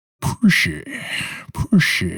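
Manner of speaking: put-on slow, drawn-out, deliberate Scottish accent. Saying a phrase the way it goes in the Sean Connery voice. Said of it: "in the Sean Connery voice".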